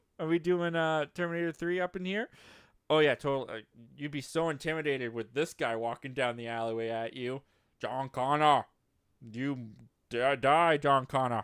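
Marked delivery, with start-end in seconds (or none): 7.8-11.4 each word dragged out slowly. Acting out the Terminator threatening John Connor: Arnold voice. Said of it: "I'd have to talk like Arnold".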